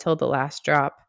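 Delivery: ordinary delivery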